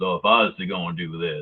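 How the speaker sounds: deep cowboy voice. Explaining what an aggressive tone is, demonstrating a low cowboy-pervert voice. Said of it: "that just sounded like a cowboy pervert".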